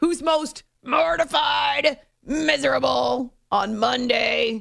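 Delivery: very slow, rough, growled delivery. Host reading out the show's poll question, growled. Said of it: "I have to growl it".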